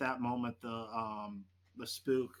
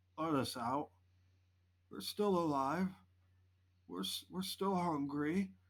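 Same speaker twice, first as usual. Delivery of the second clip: wet, gurgling voice as through water, pitched up; 5 semitones higher than usual. Narrator voices the squad lead speaking over the radio: wet, mouthful-of-water voice. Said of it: "it sounds wet, like he's talking with a mouthful of water".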